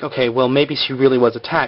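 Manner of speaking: ordinary talk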